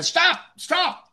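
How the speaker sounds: high-pitched put-on yelling. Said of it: "I can't yell out".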